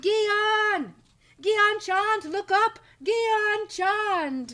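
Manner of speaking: very high, long, drawn-out holler. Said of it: "Why are you yelling?".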